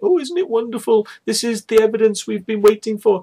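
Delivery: put-on, very high, over-the-moon gushing freak-out. Act out her reaction to the Oliver's Castle footage, imitating someone freaking out. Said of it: "freaking out going".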